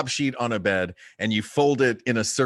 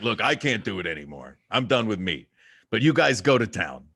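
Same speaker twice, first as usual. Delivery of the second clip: rough, gruff put-on voice. Imitating a brother who gave up meat: gruff voice imitating brother. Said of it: "why is that what your brother sounds like?".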